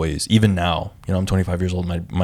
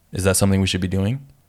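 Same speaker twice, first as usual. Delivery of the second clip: put-on super stern voice. Retelling how they spoke to kids when working with them: imitating own super stern voice. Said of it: "super stern and be like".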